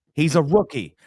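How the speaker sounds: ordinary delivery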